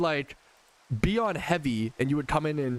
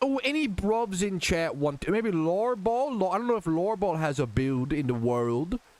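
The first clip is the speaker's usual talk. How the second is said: put-on British accent; 6 semitones higher than usual. Speaker offering a build to viewers in chat, in a british accent. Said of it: "we got one minute of British accent".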